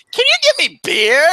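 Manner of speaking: very high cracking voice. Retelling a teen at a store asking for beer: imitating a cracking voice. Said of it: "voice cracking".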